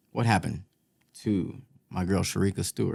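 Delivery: low, soft, sad inflection.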